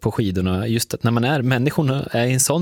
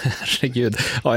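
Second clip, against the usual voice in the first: words spoken through laughter. Interviewer reacting to a point about polar bears, laughing. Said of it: "jag skrattar nu".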